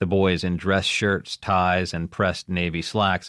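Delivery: plain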